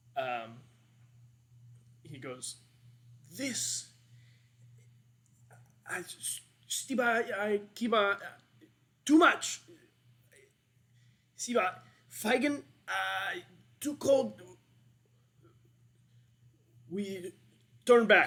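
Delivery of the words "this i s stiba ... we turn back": loud, high, halting speech chopped into broken fragments. Voicing a gnome who steps up from the group, speaking very broken Common. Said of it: "in, like, very broken common".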